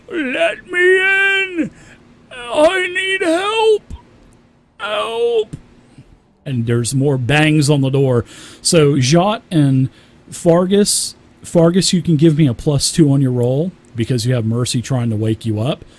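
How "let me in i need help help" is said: desperate, panicked pleading, higher pitch. Voicing someone outside banging on the door: desperate cries for help. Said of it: "you hear a banging on the door".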